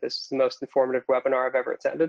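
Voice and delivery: normal talking voice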